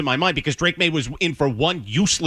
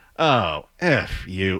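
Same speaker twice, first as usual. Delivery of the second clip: low outburst full of real disgust; 6 semitones lower than usual. Retelling what they said at a bar as the bartender overheard, retelling a disgusted outburst. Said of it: "with real disgust in my voice".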